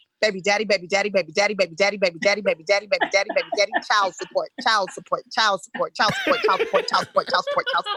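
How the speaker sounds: fast, rapid-fire, rattled-off repetition. Showing a warm-up exercise done before acting: said really fast. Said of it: "you say what you don't want really fast".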